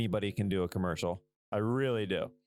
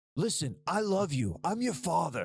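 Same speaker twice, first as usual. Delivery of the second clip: stiff, angry delivery, higher pitch; 7 semitones higher than usual. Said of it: "I seem angry".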